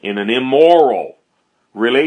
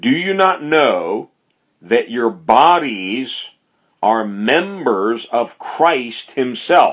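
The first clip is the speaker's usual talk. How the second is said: slow, careful reading, "bodies" drawn out. Speaker rereads verse 15 to listeners, reading slowly. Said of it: "I want to read this again slowly".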